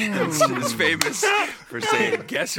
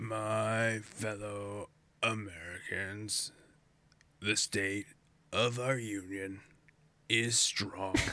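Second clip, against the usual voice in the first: very low, hushed donkey voice, "my" stretched out; 13 semitones lower, 12 dB quieter than usual. In a game of guessing cartoon voices, deliver this as an Eeyore voice. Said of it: "It is Eeyore".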